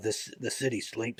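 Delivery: hushed, rough, gravelly dramatic movie-trailer voiceover. Pitching an opening scene to the others; gravelly, dramatic voiceover. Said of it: "voiceover, gravelly and dramatic".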